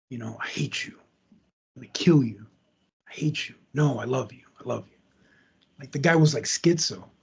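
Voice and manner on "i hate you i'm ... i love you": mock muttering, lower and quieter. Retelling what David said during an argument, imitating David muttering. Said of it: "David would say stuff under his breath".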